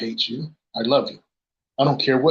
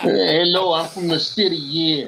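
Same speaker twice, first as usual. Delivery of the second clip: put-on New York city guy accent, pitched up; 4 semitones higher than usual. Joking about a guy from New York, doing a New York guy impression. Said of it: "That's the guy from New York".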